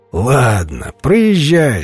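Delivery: with a laugh. Narrator reads the guard speaking to the monk, with a laugh. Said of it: "со смехом обратился караульный к монаху".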